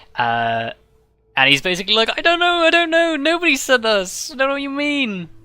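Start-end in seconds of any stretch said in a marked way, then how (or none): 2.2-5.3 very high-pitched, panicky, sniveling voice. Voicing Shadow Kai in the story, panicking and sniveling. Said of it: "he is like panicking, sniveling".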